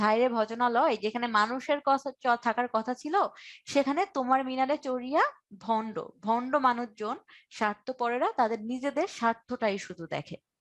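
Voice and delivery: ordinary talk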